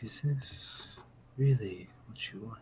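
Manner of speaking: soft-spoken, hushed, quiet voice. As the image goes dark, a voice speaks to you again, soft voice. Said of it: "You hear the kind of soft voice again".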